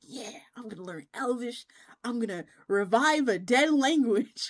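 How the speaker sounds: excited, eager, exclaiming delivery. Retelling a childhood wish to learn Elvish, imitating own excited younger self. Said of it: "I was so excited".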